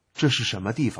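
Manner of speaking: plain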